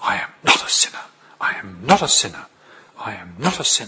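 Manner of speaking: put-on muttering under breath. Retelling what a girl in church said to herself: imitating muttering under breath. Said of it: "under her breath".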